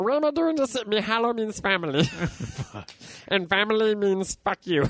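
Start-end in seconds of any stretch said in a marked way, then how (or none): 0.9-4.9 cartoonish alien character voice. Mid-story, answering another speaker's question, in a Stitch voice. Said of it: "Why are you doing a Stitch voice?".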